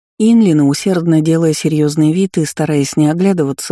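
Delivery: plain reading voice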